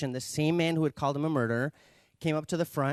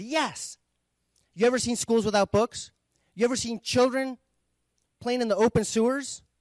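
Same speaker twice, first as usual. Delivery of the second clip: high, loud, indignant outburst. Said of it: "And the man said".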